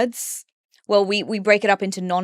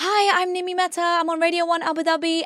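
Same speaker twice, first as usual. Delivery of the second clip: very high, cringey beginner radio presenter voice; 10 semitones higher than usual. Recalling an old radio demo, imitating the speaker's former high-pitched voice. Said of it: "I used to have a really high-pitched voice".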